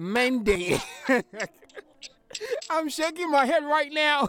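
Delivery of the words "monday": put-on Ghanaian accent. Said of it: "See the way you're pronouncing accent".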